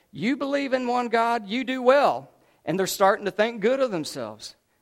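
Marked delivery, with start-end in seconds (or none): 0.1-2.3 facetious, mocking, sarcastic delivery. Reading a verse aloud where the writer is sarcastic: imitating a sarcastic tone. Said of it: "he's being really a little sarcastic here when he says".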